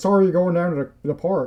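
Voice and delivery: rural Maine accent. Chatting about accents, the speaker tries an old-school Maine accent. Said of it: "the genuine like old school Maine accent".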